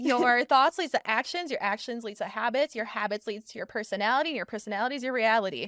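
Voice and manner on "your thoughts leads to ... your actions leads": usual speaking voice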